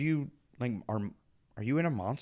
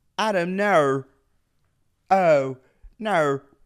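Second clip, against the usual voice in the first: loud, high, put-on Australian accent; 5 semitones higher, 9 dB louder than usual. Speaker tries out the one word they can say in australian: attempted australian accent. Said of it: "that's the only word I could say in Australian speak".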